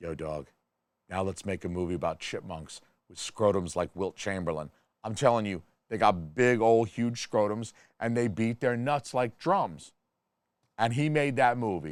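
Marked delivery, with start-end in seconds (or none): 0.0-4.7 hushed, leaning-in stage half-whisper. Acting out the director pitching a new movie to Hayao Miyazaki: imitating someone half-whispering. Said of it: "leans into Hayao Miyazaki and whispers".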